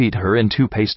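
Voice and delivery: ordinary talk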